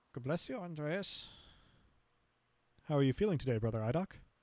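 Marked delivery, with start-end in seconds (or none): 0.1-1.2 light, generic put-on English accent, pitched up. Speaker voices an elderly Cornish character, attempting a generic English accent. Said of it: "I'll try for a little bit of just English generally".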